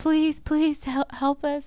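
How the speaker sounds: put-on high, small, sweet little kid voice, pleading. Imitating the children from the show begging for help: imitating sweet little child voices. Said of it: "their sweet little voices".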